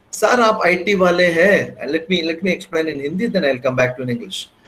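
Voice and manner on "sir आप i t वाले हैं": very slow, heavily sarcastic drawl. Recounting what a participant said to him over morning tea, retelling a sarcastic remark. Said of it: "very sarcastically said".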